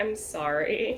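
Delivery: really meek, timid voice. Voicing a character who apologizes: really meek voice. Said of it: "just a really meek".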